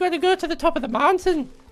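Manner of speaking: clumsy put-on Irish accent, very high pitched. Telling a story about a leprechaun, voicing his directions in a bad Irish accent. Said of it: "I can't do an Irish accent".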